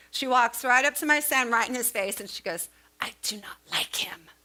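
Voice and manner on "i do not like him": put-on hushed, very mean little-girl voice. Retelling a four-year-old girl walking up to the speaker's son, imitating her meanest voice. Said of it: "Like in her meanest voice".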